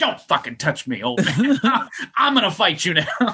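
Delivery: put-on angry outburst. Retelling how someone reacted when an old man grabbed him by the throat, mock-angry outburst. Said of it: "went from like, ... to just like".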